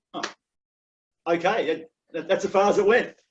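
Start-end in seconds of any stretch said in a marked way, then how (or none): 0.1-1.8 put-on stunned, dumbfounded, small voice. Speaker recalling the listener's reaction to an apology during a match, imitating a dumbfounded reply. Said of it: "you looked at me dumbfounded going".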